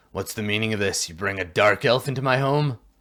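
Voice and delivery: fast, sudden, abruptly hostile delivery. A game master voices a dwarf addressing a player, sudden hostility. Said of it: "sudden hostility".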